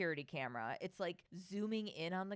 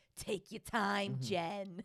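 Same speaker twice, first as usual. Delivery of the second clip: put-on wild New York accent, loud, slow, drawn out; 5 dB louder than usual. Retelling a husband's line from an episode: crazy New York accent. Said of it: "her husband has this crazy New York accent".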